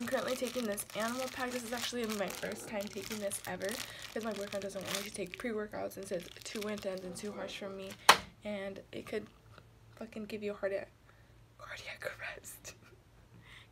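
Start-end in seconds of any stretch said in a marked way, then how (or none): 11.6-12.8 slow, hushed whisper. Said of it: "Sorry, I'm whispering".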